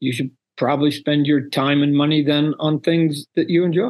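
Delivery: kindly, friendly tone. Retelling what you say to people who don't like your stuff, in a kind voice. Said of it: "in a kind voice".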